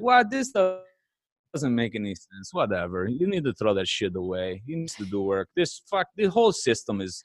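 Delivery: put-on speaking with Serbian accent. Asked to do the accent, retelling a Serbian man's reaction, Serbian accent impression. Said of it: "Do the accent".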